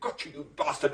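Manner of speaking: put-on taunting whisper. Retelling a taunt heard through the letterbox: imitating a whisper. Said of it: "laughing and whispering".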